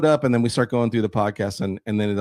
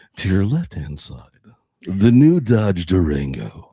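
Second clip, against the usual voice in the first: put-on radio DJ announcer voice, lower pitched; 4 semitones lower than usual. Joking about hosting morning radio shows: radio announcer voice. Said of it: "radio voice".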